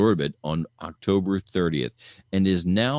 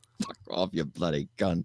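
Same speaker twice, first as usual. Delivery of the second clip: bad put-on Liverpool accent, quieter; 7 dB quieter than usual. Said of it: "It was a terrible [name]".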